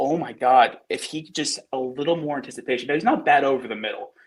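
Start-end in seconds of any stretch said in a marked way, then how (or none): none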